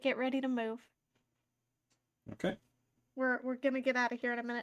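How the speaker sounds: quiet, hushed, soft, secretive voice. A player's character signals another character to get ready to leave: very quiet message. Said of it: "I will very quietly send a message".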